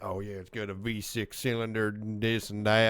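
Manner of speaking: put-on Southern accent, rattled off quickly. Imitating a car enthusiast listing engine specs: put-on southern accent. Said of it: "I don't know why you gave him a Southern accent".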